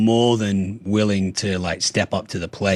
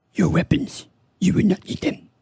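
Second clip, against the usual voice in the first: put-on very high, small, wise old alien sage voice; 10 semitones higher than usual. Speaker doing a promised impression when asked: Yoda impression. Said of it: "my best Yoda impression".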